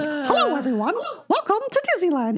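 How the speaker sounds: pitch pushed way up, swooping around. Telling friends about walking around Disneyland greeting people: Mickey Mouse voice. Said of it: "I do a pretty mean Mickey Mouse".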